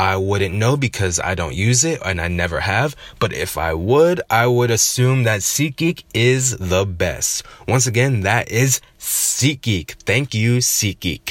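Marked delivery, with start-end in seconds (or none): 7.7-11.3 advertising announcer voice. Wrapping up a sponsor plug, in his best advertiser voice. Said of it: "that was my best advertiser voice".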